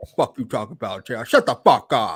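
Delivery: low, slow, bold and confident delivery. You show listeners how Tony Khan would say it, in a Tony Khan impression. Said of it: "That's how Tony Khan gonna say it. / That's how he sounds".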